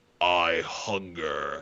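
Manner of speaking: very deep, rumbling voice. Pitching an imagined post-credit scene, a voice speaks out of darkness: deep voice. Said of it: "you hear a deep voice".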